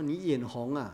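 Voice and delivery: plain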